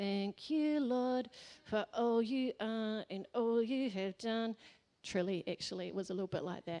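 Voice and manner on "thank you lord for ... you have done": put-on delivery through gritted teeth, slower. Speaker acting out their past self kneeling in prayer, through gritted teeth. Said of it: "kind of through gritted teeth, saying something like".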